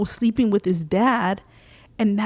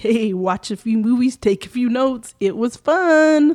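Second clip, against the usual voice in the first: taunting, mocking delivery with fun drawn out; 2 semitones higher, 3 dB louder than usual. Retelling a movie scene, quoting Stu: imitating Stu mockingly. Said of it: "he says mockingly".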